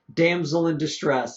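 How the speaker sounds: usual speaking voice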